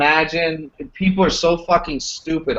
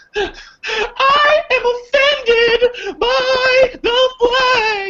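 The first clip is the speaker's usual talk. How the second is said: very high, slow, drawn-out whiny fake crying. Mocking how a woman starts out her thing, imitating someone crying. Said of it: "she starts out her thing crying".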